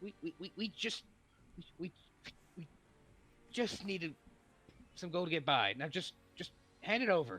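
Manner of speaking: trembling, breaking voice. Narrating a scene, the speaker voices a tiefling woman: trembling voice. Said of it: "trembling in the tiefling woman's voice".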